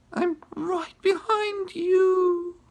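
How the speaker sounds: very high raspy voice, drawn-out "you". Narrator reads a character speaking up from behind another in the shadows, raspy voice. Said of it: "Ruth Rose said in a raspy voice".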